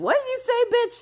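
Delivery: very high, overblown angry tone. Acting out snapping back at someone's sly remark: imitating an overreacting angry reply. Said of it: "why are you overreacting?".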